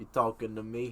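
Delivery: near-normal, natural speaking voice. Showing the others an impression: Robert De Niro voice. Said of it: "This is me doing, uh, Robert De Niro".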